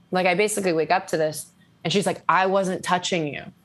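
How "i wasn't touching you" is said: play-acted, frantic, panicked, upset, freaked-out outburst. Retelling what a friend said at night in the hotel: imitating someone freaking out. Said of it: "fucking flipping out".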